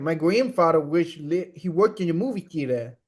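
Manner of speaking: bad put-on near-Boston accent. Quoting a teenage movie theater worker, in a bad near-Boston accent. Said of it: "The genuinely the most insane accent I've ever".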